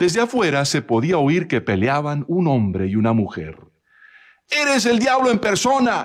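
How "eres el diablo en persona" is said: very high-pitched, shrill, heated shouting. A woman fighting with a man inside the house speaks, shouting in a quarrel. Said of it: "gritaba la mujer".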